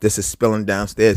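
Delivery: plain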